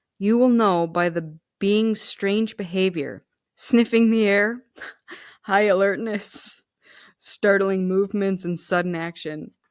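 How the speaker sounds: amused voice broken by laughter. Describing how to recognize a kitsune in human form, laughing while talking. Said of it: "I'm laughing because I'm imagining".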